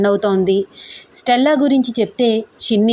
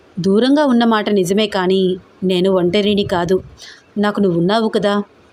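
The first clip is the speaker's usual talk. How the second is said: ordinary delivery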